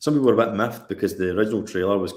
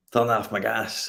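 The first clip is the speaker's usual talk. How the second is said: put-on heavily overdone, laid-on Scottish accent; 2 semitones higher than usual. Repeating the other speaker's phrase back to them in an exaggerated Scottish accent. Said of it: "you had to exaggerate your Scottish accent".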